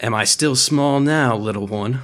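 whispered, taunting voice. Voicing a character who pins a foe and whispers in his ear. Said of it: "He just kind of whispers in his ear".

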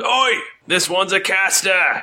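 very high guard voice, calling out. Voicing the guard after he resists a spell: guard voice. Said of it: "He goes".

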